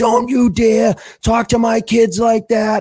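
very high-pitched, furious, irate scream. Retelling how a man from the bench screamed at the referee: imitating a scream. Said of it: "screaming at the referee".

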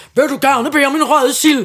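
put-on strong Bornholm Danish accent. Retelling what a man said, speaker quotes him in a thick Bornholm accent. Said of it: "med en tyk bornholmsk accent".

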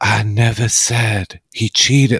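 slow, stunned gasping voice. Retelling how a woman plays dumb when called out: imitating her stunned gasping. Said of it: "like she's gasping for air and speaking slowly and stunned".

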